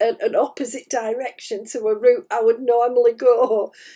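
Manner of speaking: ordinary delivery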